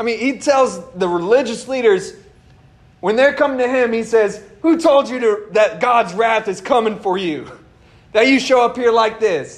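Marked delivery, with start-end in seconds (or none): 4.6-9.6 mocking, taunting street-style delivery. Retelling John's words to the religious leaders: imitating John the Baptist mocking. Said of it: "He's almost mocking them".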